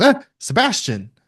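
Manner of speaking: high, loud startled cry. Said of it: "Everett fully jumps".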